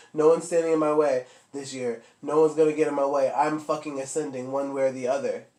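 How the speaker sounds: plain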